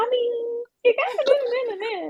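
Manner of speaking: voice pushed really, really high in pitch. Imitating how she talks: imitating her high-pitched voice. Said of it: "she'll make her voice really, really high".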